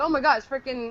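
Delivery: ordinary delivery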